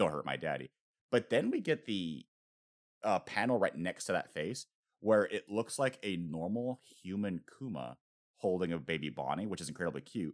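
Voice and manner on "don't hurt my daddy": put-on crying voice. Retelling a manga panel where a character pleads: imitating someone crying. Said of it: "but she's crying, going like".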